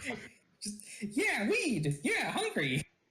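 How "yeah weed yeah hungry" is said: high, annoying, tiny cartoon dog voice. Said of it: "Repeating everything you say in an annoying voice".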